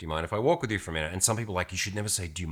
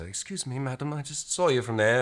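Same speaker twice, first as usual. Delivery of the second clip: less blokey, relaxed voice, nudged a little higher; 6 semitones higher than usual. Man shows how he approaches a woman to take the pressure off her: a little higher voice. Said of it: "make my voice a little bit higher".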